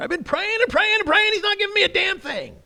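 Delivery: said with anger. Talking about prayer, showing that it can be said with anger. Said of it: "You can even say it with anger".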